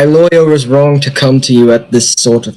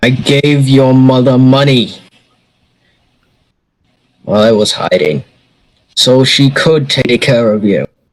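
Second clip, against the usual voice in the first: put-on British accent, odd-sounding, held throughout. A father who was hiding answers his son, in a British accent. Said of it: "What's with the British giddy up?".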